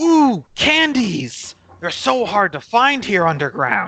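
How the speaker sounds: put-on high, swooping, delighted childlike excitement. Retelling how a character reacts on opening a gift: mock childlike excitement. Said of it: "literally like a child".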